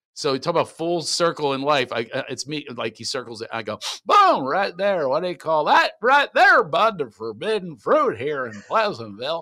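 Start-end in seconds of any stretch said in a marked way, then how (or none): 4.0-9.4 put-on old man voice, higher. Showing how the Pleasantville TV repairman was dubbed: old Don Knotts voice. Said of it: "doing him as an old guy".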